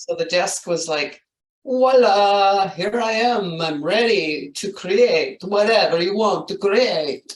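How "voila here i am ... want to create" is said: puppet-character voice. Voicing a big desk that commands the space: the Count from Sesame Street voice. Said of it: "that kinda sounded like the guy off of, uh, Sesame Street".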